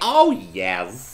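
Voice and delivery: put-on high-pitched old lady voice. Imitating how a woman keeps saying a phrase, in an old lady voice. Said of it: "old lady".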